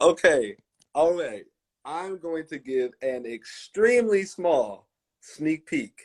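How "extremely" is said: "extremely" leaned on with heavy stress. Offering listeners a small sneak peek, stress on 'extremely'. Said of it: "Extreme emphasis on the extreme".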